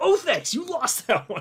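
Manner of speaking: fed-up blurt, voice high. Retelling a TV panel exchange: imitating exasperated Jim Cramer. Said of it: "it sounded pretty much like that".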